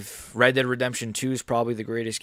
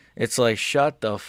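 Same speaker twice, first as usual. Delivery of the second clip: ordinary talk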